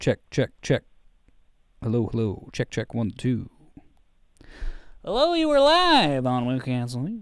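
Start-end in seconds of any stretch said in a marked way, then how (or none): 5.0-7.2 radio DJ voice, high and swooping. Host opening a live call-in show, in a put-on radio voice. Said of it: "This is my uh, radio voice".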